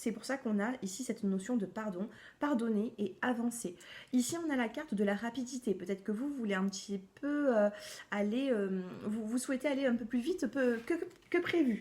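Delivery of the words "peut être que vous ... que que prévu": stumbling and halting, tripping over words and restarting. Presenting a card during a reading, the speaker loses the thread: stumbling over words. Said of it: "Pardon, je bafouille".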